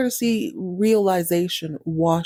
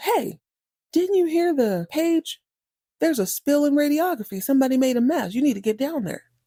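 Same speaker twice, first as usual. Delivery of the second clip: acted-out, pitched-up yelling; 8 semitones higher than usual. Retelling a tired nurse ordering a janitor down the hall: imitating a nurse yelling. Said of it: "she yells at him".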